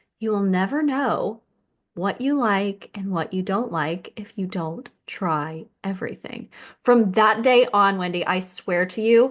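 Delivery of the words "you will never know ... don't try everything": smooth delivery. Telling a listener what a woman once said to her, imitating her smooth voice. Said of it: "She's like".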